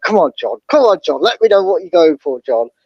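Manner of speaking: ordinary talk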